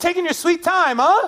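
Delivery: acted, very high-pitched sarcastic blurt. Retelling what the speaker blurted at people twenty feet away, retelling a sarcastic blurt. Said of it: "are you being sarcastic right now?".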